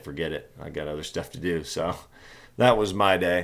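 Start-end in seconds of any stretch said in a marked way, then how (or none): none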